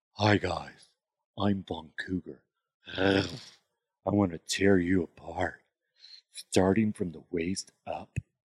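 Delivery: predatory, flirty come-on voice. Recalling a character the group remembers, the speaker does her line in Von Cougar voice. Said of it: "And she'd always be like".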